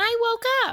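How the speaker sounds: put-on very high, tiny little child baby voice. Retelling a scene where a child speaks on waking: little tiny baby voice. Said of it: "we hear a little tiny baby voice say".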